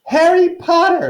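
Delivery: very high-pitched, loud little creature voice. Reading a story aloud, voicing the creature greeting Harry: high-pitched Dobby voice. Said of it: "said the creature in a high-pitched voice".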